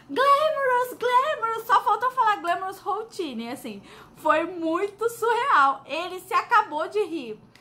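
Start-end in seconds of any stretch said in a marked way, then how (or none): 0.1-1.6 play-acted eager, excited, high yelled shout. Speaker retells answering a question about makeup style, retelling own shout. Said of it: "a louca aqui gritando".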